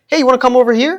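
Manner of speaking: very high, cheery, friendly everyday American voice. Calling a dog over in a put-on accent: regular American accent, higher pitch. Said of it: "the regular American".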